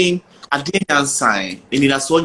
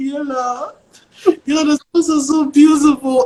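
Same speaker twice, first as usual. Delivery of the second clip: very high, tearful crying voice; 12 semitones higher than usual. Retelling a voice message sent to Niela while crying: retelling own crying. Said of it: "why are you crying?".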